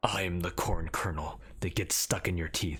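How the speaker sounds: failed attempt at a cartoon duck-hero voice. Asked for Darkwing Duck's voice, the speaker tries it: attempted Darkwing Duck voice. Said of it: "I'll I'll I'll try though".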